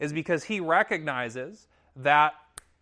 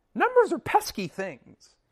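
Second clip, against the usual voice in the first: very high, intense, swooping lecturing professor voice; 10 semitones higher than usual. Quote what your college philosophy professor used to say, in Dr. Key's high-pitched voice. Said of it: "in his high-pitched voice".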